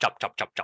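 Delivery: very fast, rattled-off run of repeats. Showing learners how the word sounds when said faster: saying it faster. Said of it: "when you say that faster".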